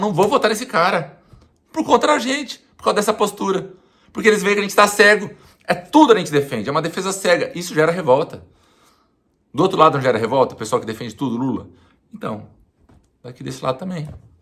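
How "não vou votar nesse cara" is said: high-pitched, loud, furious, angry outburst.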